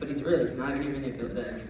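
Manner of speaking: plain reading voice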